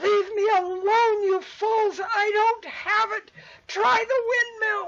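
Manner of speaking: shrill, furious shouting, very high and loud. Voicing a man yelling at fleeing creatures: man yelling angrily from upstairs. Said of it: "you hear a man's voice follow them out saying".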